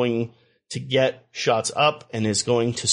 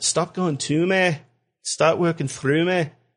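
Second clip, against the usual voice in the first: bad, clumsy put-on Manchester accent; 4 semitones higher than usual. Speaker imagines a player talking like Jamie Tartt, in a bad Jamie Tartt impression. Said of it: "I don't have a good Mancunian accent".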